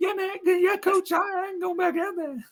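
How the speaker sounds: very high-pitched, thin, squeaky voice. Retelling how a player quit in preseason: imitating a high-pitched voice. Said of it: "Shady does that high-pitched voice".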